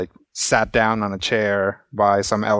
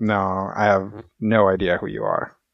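dismissive, slower, eye-rolling tone. A storyteller voices a stranger answering the group, dismissive eye-roll reply. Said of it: "rolls his eyes, and is like".

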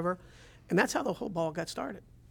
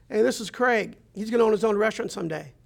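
loud holler, called out across a distance; 4 semitones higher, 6 dB louder than usual. Retelling how the owner called out in the kitchen, imitating Walt hollering. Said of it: "he hollers out".

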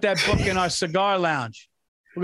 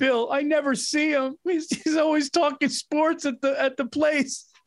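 high, tearful, crying lament; 7 semitones higher than usual. Speaker acts out Stacy phoning Bill, imitating Stacy crying. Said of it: "Stacy would call you crying".

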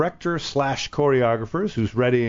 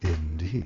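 mock, very low, almost sensual, lascivious tone; 8 semitones lower, 6 dB quieter than usual. Imitating how Michael answers a dinner question: imitating Michael's lascivious indeed. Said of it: "You say indeed with an almost lascivious tone".

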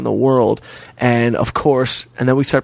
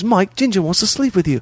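put-on poor Australian accent, pitched up; 8 semitones higher than usual. Retelling what a friend said, in a bad australian accent. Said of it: "I do a bad accent".

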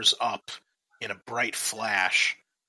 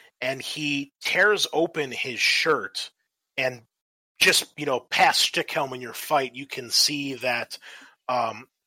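ordinary talk

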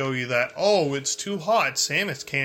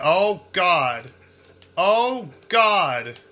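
frantic, panicked exclamations; 4 semitones higher, 5 dB louder than usual. Player checking a room realizes a mistake, panicking. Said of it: "I'm panicking".

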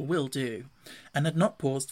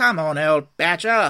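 very loud, drawn-out calling bellow; 10 dB louder than usual. The rat calls out to the badger in the hedge, shouting. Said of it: "shouted the rat".

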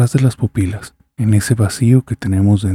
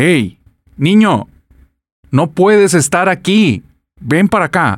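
put-on, raised, high calling voice; 9 semitones higher, 4 dB louder than usual. Retelling how the father called the boy again louder: imitating a raised voice. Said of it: "levanté la voz y le dije".

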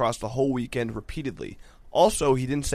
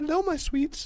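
put-on baby talk voice pitched very high; 3 dB quieter than usual. The speaker quotes a boyfriend's usual greeting to his partner, in a baby voice. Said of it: "in a baby voice".

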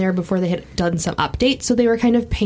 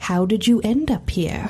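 spooky, sinister put-on storyteller voice. Reading a letter aloud, trying a best attempt at a creepy voice. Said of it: "I'm going to try to do my best creepy voice".

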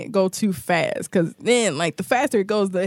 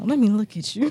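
imitated grandma voice. Repeating the other speaker's words back: imitating a grandma voice. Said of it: "Sound like a grandma".

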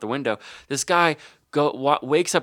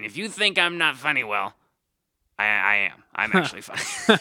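playful, teasing voice. Quoting a comedian's catchphrase: Rick Kearns impression. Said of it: "That's such a good Rick impression".

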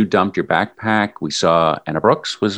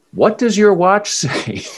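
mock screaming, very high-pitched; 11 semitones higher than usual. Retelling what a running partner screamed mid-run, retelling a scream. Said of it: "you just started screaming".

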